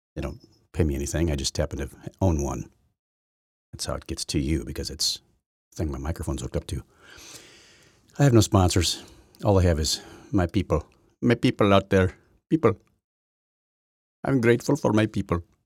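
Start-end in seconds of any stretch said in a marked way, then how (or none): 9.4-15.4 mocking put-on voice, pitched higher. Speaker with no sponsors, making fun of people who talk this way: mocking a way of talking. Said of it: "I'm making fun of people who talk like that".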